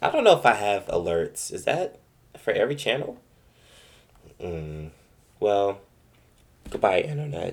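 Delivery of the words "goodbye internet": voice breaking, higher. Signing off at the end of the recording episode: voice cracking. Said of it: "Why did my voice crack?".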